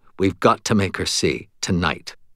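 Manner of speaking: usual speaking voice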